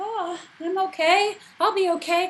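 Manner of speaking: high-pitched, breezy, reassuring, dismissive tone.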